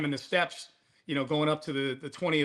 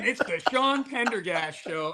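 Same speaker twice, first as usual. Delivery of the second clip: intro announcer voice-over read; 4 semitones higher than usual. Retelling hearing the show's voice guy start the intro: imitating the announcer voice guy. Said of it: "voice guy was going".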